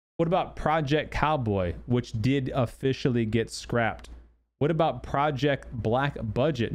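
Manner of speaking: usual speaking voice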